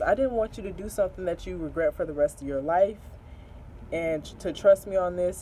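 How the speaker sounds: ordinary delivery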